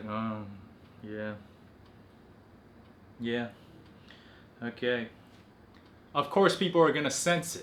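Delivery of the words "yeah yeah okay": slow, dull, flat, level, unenthusiastic monotone. Describing a sullen person hunched over and not speaking up, flat unenthusiastic monotone. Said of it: "kind of a monotone voice like".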